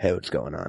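low, hushed, near-whispered gravelly flirty voice. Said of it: "I drop it down and I'm like".

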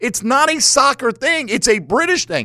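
high-pitched lecturing voice.

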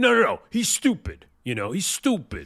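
very high, shrill shouted rant. Mocking a TV investor who yells on a show: imitating Mark Cuban yelling. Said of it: "Mark Cuban's, like, yelling".

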